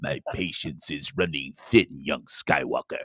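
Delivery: hushed, breathy, sinister villain whisper with quiet menace. Imagining a complaint redone in the Emperor from Star Wars voice. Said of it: "in the voice of the Emperor from Star Wars".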